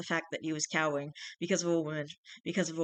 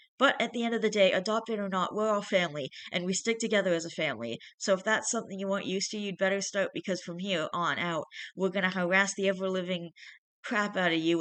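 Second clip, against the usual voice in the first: ordinary delivery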